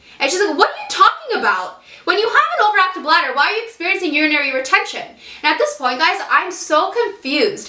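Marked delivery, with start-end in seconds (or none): 0.6-5.0 acted-out raised, high-pitched, questioning tone. Retelling a doctor questioning the symptoms: imitating a raised voice. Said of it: "that was her exact tone of voice too".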